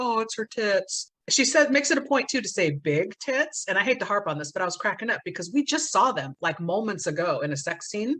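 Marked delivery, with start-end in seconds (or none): 0.0-1.1 slow, beaten-down, deflated, defeated delivery. Retelling a movie scene, imitating Tanya sounding defeated. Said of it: "she's looking all defeated, going like".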